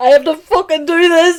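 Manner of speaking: high, tearful, weeping anguish. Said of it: "tears going down his face, but his face is, like, screwed up".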